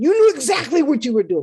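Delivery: shrill, very loud, high-pitched accusing shout. Retelling what an angry man said to the speaker: imitating someone yelling. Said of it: "He was yelling at me".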